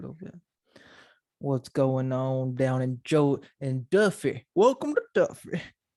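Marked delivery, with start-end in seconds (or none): 1.4-5.6 put-on southern Georgia accent. Speaker switches into a South Georgian accent for a bit. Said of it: "my accent does change into like a South Georgian accent".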